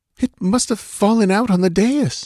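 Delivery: very high, halting stammer. Narrator reads a woman's reply to a man's question, stammering. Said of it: "she stammered".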